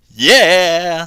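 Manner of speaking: loud, high, extra sassy, long stretched-out yeah. Trying the line again with more sass: more sass. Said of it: "Was that the correct amount of sass that time?".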